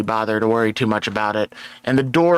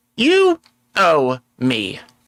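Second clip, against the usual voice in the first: pointed, anime-style anger with swooping pitch; 4 semitones higher than usual. Voicing a character who taps her maul on her shoulder: angry. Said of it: "you would see the giant anger mark on her forehead".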